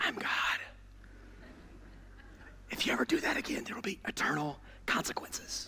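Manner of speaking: hushed whisper. Acting out a sibling at the dinner table claiming to be god: whispering. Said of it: "whisper in your".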